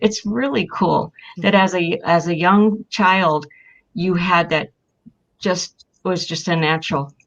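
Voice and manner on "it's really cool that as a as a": ordinary delivery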